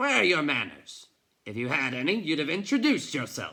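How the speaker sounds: booming, gruff man's voice. Reading a story aloud, a man speaks to the boy from behind: gruff voice. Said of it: "he heard the gruff voice behind him".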